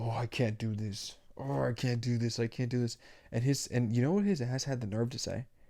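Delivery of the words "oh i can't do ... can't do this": put-on angry grunting, slower. Retelling the man cutting the speaker's hair: mock-grunting, all mad. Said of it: "he would just start like grunting and being all mad".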